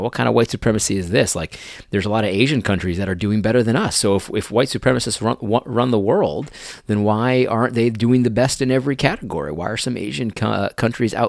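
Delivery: ordinary delivery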